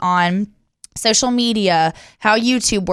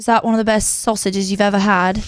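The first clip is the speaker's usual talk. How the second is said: put-on British accent. Speaker retells what a man said, imitating a british accent. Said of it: "he comes up with a British accent".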